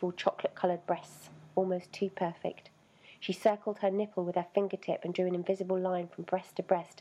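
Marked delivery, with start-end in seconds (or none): none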